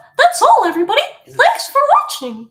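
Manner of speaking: very high and loud, with swooping pitch. Streamer signing off to viewers, in a Mickey Mouse voice. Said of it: "It's Mickey Mouse".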